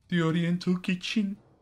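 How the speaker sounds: put-on Brummie accent. Asked to follow up with a Brummie accent, the speaker attempts it: attempted Brummie accent. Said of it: "That's my attempt".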